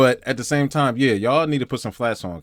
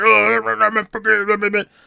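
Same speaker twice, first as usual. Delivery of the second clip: mock, very high, terrible, harsh critical tone; 9 semitones higher, 5 dB louder than usual. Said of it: "the tone of voice was that terrible, like, critical".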